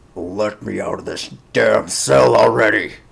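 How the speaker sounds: gruff, creaky orc warrior voice. A game master voices a prisoner calling out from a cell, gruff half-orc voice. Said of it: "you hear a voice, gruff".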